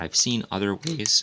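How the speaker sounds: loud phrase, voice cracking mid-phrase. Explaining ways of painting birch trees in a video, voice cracking. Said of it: "sorry for the voice crack".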